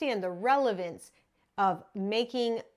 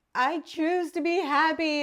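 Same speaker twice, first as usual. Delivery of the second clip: put-on high, drawn-out yell; 7 semitones higher, 4 dB louder than usual. Retelling shouting this while heading to a tennis wall, reenacting yelling it out. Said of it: "And I'm yelling this out".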